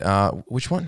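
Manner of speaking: play-acted annoyed, irritated, pissed-off tone. Retelling a pharmacy worker's reply: imitating someone pissed off. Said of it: "he was, like, pissed off".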